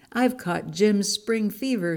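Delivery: ordinary delivery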